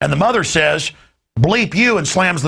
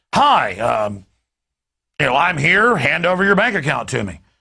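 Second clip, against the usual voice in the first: mock firm, authoritative, official-sounding delivery; 2 semitones lower than usual. On the radio, describing a man at a door in a news clip: mock-authoritative tone. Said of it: "He just says it authoritatively".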